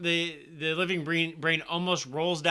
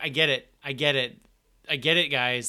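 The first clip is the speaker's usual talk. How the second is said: normal talking voice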